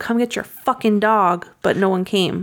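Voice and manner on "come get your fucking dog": plain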